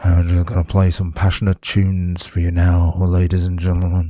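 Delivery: low, creepy late-night DJ voice. The host picks the right voice for this bit: creepy midnight DJ voice. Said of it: "I've got to sound really creepy, like a midnight DJ".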